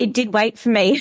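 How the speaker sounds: emotional, welling-up voice, close to crying. Speaker recalling a lesson that changed their life; on the verge of tears. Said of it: "now I'm going to cry".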